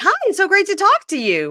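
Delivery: mock over-excited, very high, gushing sing-song. Asking the other speaker if they sounded like this on the phone; mock overly excited. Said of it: "Were you overly excited and like".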